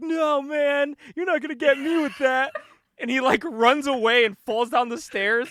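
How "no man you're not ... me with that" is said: high-pitched, dismissive, brushing-off dude-style voice. Retelling a movie scene, doing an impression of Grunge running away. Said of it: "That's a really good impression".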